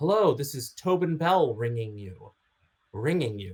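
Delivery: very formal, proper delivery. Retelling a phone interview call: imitating Tobin Bell, very formal. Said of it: "it was just so very formal".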